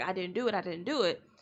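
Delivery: put-on crying male voice. Retelling a movie flashback scene of an innocent man: imitating Michael Peña crying. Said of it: "he's crying like".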